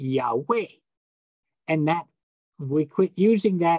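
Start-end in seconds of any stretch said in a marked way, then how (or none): 0.0-0.7 Yahweh with the weight on second syllable weh. Explaining the name of God, Yahweh stressed on the second syllable. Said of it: "So the emphasis is on way".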